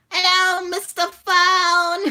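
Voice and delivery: silly, high, loud put-on toilet voice, "phone" drawn out. Trying to pull off a toilet voice: put-on toilet voice. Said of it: "Toilet Voice".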